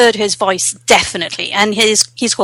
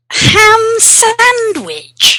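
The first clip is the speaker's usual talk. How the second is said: sneering, snide delivery, pitched way up and swooping; 12 semitones higher than usual. Saying a random phrase in a game of guessing adjective voices, snidely. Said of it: "is it snidely?".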